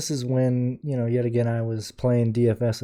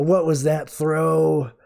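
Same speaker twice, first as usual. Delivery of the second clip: put-on, mild jeering yell; 4 semitones higher than usual. Retelling heckling the other team from the bleachers: imitating own past yelling.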